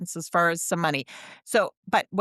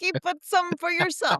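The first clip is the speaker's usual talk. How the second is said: very high-pitched put-on Italian accent; 12 semitones higher than usual. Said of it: "she didn't sound like that either".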